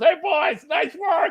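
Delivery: put-on, very high, slow voice chuckling through words. Retelling how dad praised the boys: imitating dad laughing while talking. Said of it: "we just hear Dad laughing, goes".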